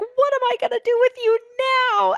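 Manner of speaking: frantic, panicked freak-out, very high pitched. Retelling a movie party scene, imitating someone freaking out. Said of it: "And freaking out".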